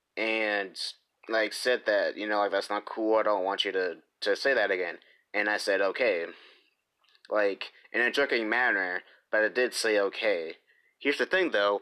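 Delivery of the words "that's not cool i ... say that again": ordinary talk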